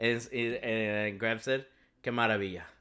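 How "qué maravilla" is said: put-on flat monotone voice. Retelling a favorite movie moment: monotone Miguel O'Hara imitation. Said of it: "In the most monotone way of saying it".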